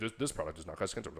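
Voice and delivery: rapid commercial disclaimer delivery. Retelling how a fan said something, in a rapid commercial disclaimer voice. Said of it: "like one of those commercials".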